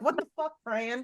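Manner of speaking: mock startled, frightened, hushed blurt. Retelling the group's reaction when she yelled at them over Zoom, retelling a scared exclamation. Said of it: "and we're all scared, ducking".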